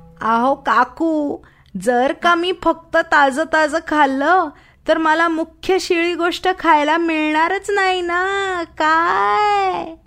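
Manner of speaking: put-on squeaky voice. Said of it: "डुकरी चिरक्या आवाजात म्हणाली".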